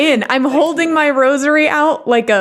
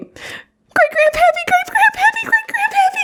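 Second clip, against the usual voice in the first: panicked scream, higher pitched. Fleeing downstairs in character after seeing a ghost: character screaming in panic.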